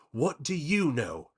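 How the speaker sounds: high-pitched, words spat out. A narrator reads a character's reply to the monster: spat out. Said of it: "Connor spat".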